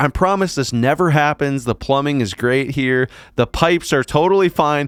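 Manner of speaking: panicked, frantic high-pitched screaming. Recounting a woman grabbing towels, retelling her screaming. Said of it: "She's like screaming".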